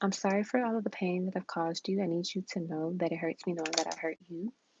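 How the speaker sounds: ordinary talk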